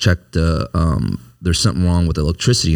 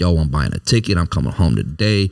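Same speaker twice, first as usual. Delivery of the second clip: plain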